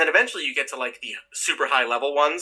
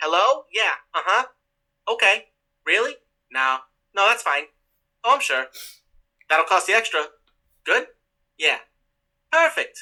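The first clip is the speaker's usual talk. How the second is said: high-pitched put-on New Jersey accent; 5 semitones higher than usual. Describing a script they wrote, the speaker plays a secretary answering a call, Jersey accent. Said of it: "answered by a Jersey accent secretary who goes".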